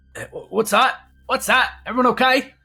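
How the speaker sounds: guard voice calling out, pitched very high. Voicing a guard who hears a scream and calls out: guard calling out. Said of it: "you hear a voice call and go".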